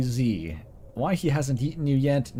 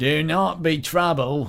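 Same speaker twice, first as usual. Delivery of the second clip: put-on vaguely Cockney goblin accent; 3 semitones higher, 3 dB louder than usual. Narrator voices a goblin addressing the players, vaguely Cockney goblin accent. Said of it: "vaguely Cockney at times".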